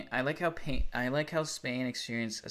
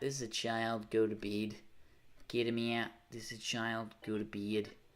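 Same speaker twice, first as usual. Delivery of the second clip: soft put-on Australian accent; 2 semitones lower, 5 dB quieter than usual. Repeating the same lines while trying out an attempted aussie accent. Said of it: "Is that a good Aussie accent?".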